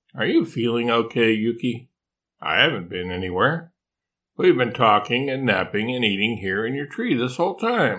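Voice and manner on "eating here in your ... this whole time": plain reading voice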